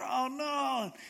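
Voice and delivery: high-pitched, panicked groan. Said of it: "He's just freaking out".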